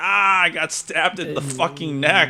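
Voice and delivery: mock, very high-pitched cry of pain. Retelling how a stabbed character was rolling around: imitating someone in pain. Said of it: "rolling around, like, in pain".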